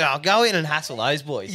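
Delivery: ordinary talk, nothing marked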